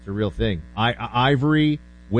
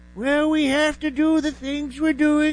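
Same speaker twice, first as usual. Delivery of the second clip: put-on whispery voice, much higher pitch; 13 semitones higher than usual. Speaker asks whether the Lincoln movie voice was too weird, high whispery Lincoln voice. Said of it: "weird, high, whispery voice".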